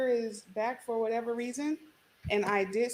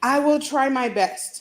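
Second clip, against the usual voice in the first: much louder, slow near-yell. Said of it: "it's like I'm yelling".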